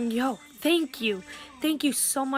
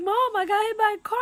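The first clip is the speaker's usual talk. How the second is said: mock tearful, high sobbing words; 9 semitones higher than usual. Retelling calling mom after being hit by a car: imitating own past crying. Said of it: "I was just crying".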